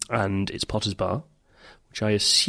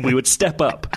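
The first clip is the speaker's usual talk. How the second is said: ordinary talk, nothing marked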